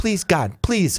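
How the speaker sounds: put-on desperate begging. Retelling what he said on hearing he never came over, imitating desperate begging. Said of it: "he's kind of begging".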